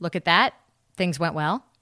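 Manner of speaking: normal talking voice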